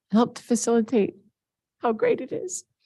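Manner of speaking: high, tearful voice on the edge of tears. At a board meeting, thanking a leader for their leadership, on the verge of tears. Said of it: "if I can do this without crying".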